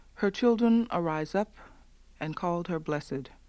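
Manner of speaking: ordinary talk, nothing marked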